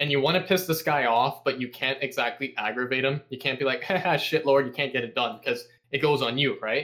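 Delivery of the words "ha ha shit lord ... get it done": usual speaking voice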